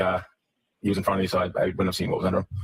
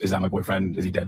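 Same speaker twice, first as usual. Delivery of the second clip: ordinary delivery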